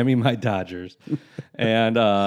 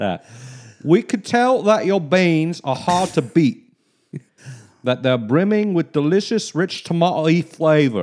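put-on English accent, much higher; 6 semitones higher, 3 dB louder than usual. Retrying a written line aloud after a correction, in an English accent. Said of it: "You got to do it in an English accent".

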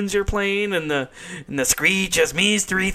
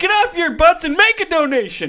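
mock, very high-pitched shrieking, screaming yell; 11 semitones higher, 4 dB louder than usual. Retelling an episode where Slater grabs a microphone, imitating Slater screaming. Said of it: "he's just screaming at it he's like".

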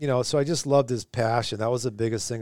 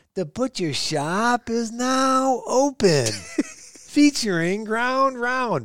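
put-on loud, booming Boston accent, very drawn out; 13 semitones higher, 3 dB louder than usual. Recalling a coach announcing his little skate shop to everyone, loud Boston accent. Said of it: "in his Boston accent, he'd say it really loud".

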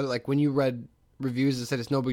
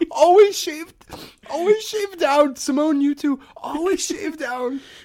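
mock crying, higher and louder; 7 dB louder than usual. Retelling another speaker's words while they cried: imitating someone crying. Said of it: "You're like, you're, like, crying".

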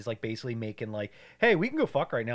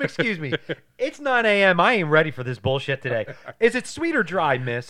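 loud, high, play-acted angry waiter voice; 5 semitones higher, 7 dB louder than usual. Retelling a movie scene where the waiter gets mad: imitating a mad waiter. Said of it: "He gets, like, so mad at her".

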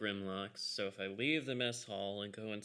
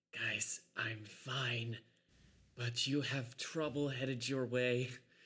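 soft, hushed whisper; 3 semitones higher than usual. Crouched in a corner, a character whispers to the group through a sending stone: quiet whisper. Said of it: "and quietly whisper".

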